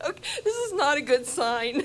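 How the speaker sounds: crying through the words, tearful voice. Welcoming everyone to a new minister's installation, already crying. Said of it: "I'm already crying".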